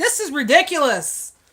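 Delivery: very loud, high-pitched outburst. Retelling complaining in a store: retelling a loud complaint. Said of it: "And I'll say it like that".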